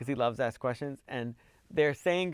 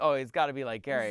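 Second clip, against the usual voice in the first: ordinary talk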